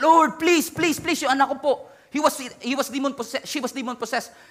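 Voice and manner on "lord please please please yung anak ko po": desperate, furious, pitched-up voice. Retelling a mother begging Jesus to free her possessed daughter, acting out furious begging. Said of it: "he kept on begging Jesus".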